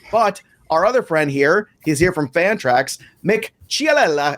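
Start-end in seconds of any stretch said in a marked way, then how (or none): 3.3-4.4 over-the-top Italian accent, pitched up. Introducing a friend from Fantrax by name, exaggerated Italian accent. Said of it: "I like to say it like that... to sound as Italian as possibly can".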